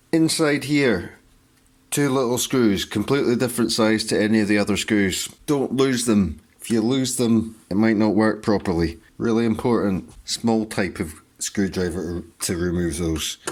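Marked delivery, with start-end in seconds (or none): 0.1-10.1 higher, louder hyped-up wired delivery. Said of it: "Why am I speaking like this?".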